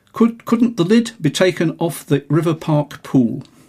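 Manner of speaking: ordinary delivery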